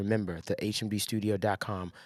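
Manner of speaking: very quiet, very low, hushed murmur. Promoting a recording studio, showing how it sounds: talking low. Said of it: "I'm talking low".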